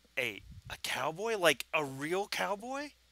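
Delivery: put-on high, awestruck small boy voice. Narrating a story, voicing a little boy looking up at a cowboy, awestruck. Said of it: "kind of with this awestruck face".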